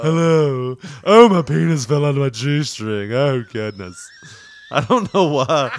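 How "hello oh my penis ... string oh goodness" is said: camp, put-on club performer stripper voice. Improvising a strip club scene, a performer speaks in a put-on stripper character voice. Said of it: "When I do that voice".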